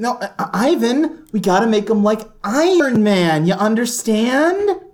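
mock condescending voice. Recapping how a character talks to Ivan, imitating Justin Hammer condescending. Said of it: "is very condescending to him".

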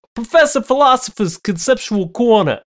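put-on Brooklyn accent. Asked to do a Brooklyn, repeating the phrase in a Brooklyn accent. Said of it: "Can you do a Brooklyn?".

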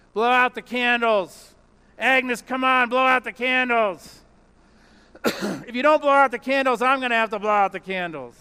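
gruff mumble. At Agnes's birthday, the diner owner speaks to her; retelling Harry's gruff mumble. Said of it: "gruffly mumbled".

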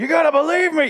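very high, loud, shrieking scream. Retelling a man's episode of switching between whispers and screams; mock-screaming. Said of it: "my terminology is whispers and screams".

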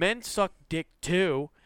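put-on heckler shout, high and slow. Retelling how a heckler interrupted the set: imitating a heckler yelling. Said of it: "she yells out again".

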